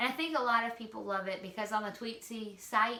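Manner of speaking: ordinary talk, nothing marked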